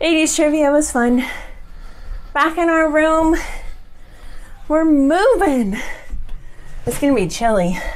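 out of breath. Just back from the stairs, updating viewers on the trip, out of breath. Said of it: "I'm out of breath".

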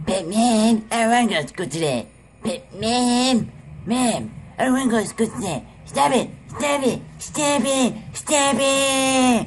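very high, drawn-out bratty cartoon voice. Recording an impressions video, the speaker does an Eric Cartman impression. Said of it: "My next impression will be Eric Cartman".

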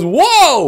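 very high, loud excited whoop overloading the mic. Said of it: "some guy gets really excited and goes".

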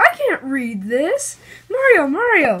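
very slow, thrilled, swooping call. Yoshi, green again, goes to talk to Mario, excited Yoshi voice. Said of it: "you sound excited".

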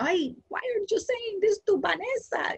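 put-on very high, slow voice, thick Colombian accent. Retelling what her mother said after she burst into tears as a child, thick Colombian accent. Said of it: "my mother had a very thick Colombian accent".

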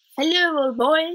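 cheery and high. Narrator reading a man going over to greet Carl, cheerful. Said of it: "he said cheerfully".

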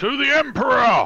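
very loud, very high drill-sergeant bellow. Raising a toast to the whole dinner table, bellowing drill-sergeant voice. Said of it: "bellow out in proper drill sergeant voice".

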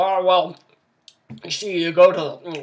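slow, loud speech with mouth full, chewing. Showing an easy trick: talking with your mouth full. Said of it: "talk with your mouth full".

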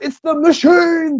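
high, slow, frantic overwrought wail. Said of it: "He was continuously going".

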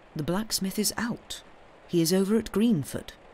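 ordinary delivery, nothing marked

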